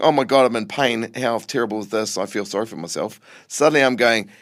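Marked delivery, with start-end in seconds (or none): none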